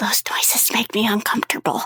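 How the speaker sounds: speaking very softly, hushed. A game master voices River as the super mutants start to get up: very softly. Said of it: "River very softly goes".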